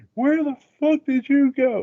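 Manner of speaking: high angry tone.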